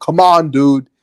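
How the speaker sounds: very loud, high-pitched drill-sergeant yell. Speaker recalls playing drill sergeant at a show host, retelling own yelling. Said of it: "I just started like yelling like that".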